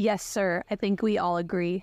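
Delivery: ordinary delivery, nothing marked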